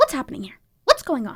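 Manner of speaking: faint hint of high cartoon mouse voice. Going first in a what's-going-on contest, a slight Mickey Mouse voice. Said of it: "You almost channeled a little bit of Mickey".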